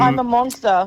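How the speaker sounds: normal talking voice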